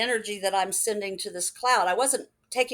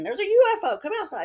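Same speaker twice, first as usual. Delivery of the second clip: put-on screaming, higher pitch; 10 semitones higher, 5 dB louder than usual. Telling a story of a strange sighting, the speaker repeats what was screamed at the time, retelling a scream.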